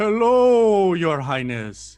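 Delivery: acted-out scream. Retelling greeting the last giant king, reenacting a scream in Giant. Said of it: "I scream in giant".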